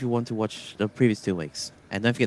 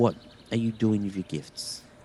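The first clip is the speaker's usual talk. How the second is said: deep, guttural, condescending put-on voice; 4 dB quieter than usual. Describing what a berating voice would say; guttural, deep, condescending voice. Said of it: "in a guttural, deep, condescending voice".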